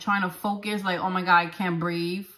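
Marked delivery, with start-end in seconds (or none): none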